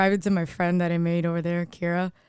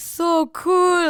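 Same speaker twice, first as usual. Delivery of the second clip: put-on Israeli-accented speech; 10 semitones higher than usual. Retelling what passing soldier girls said: imitating an Israeli accent. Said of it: "with an Israeli accent".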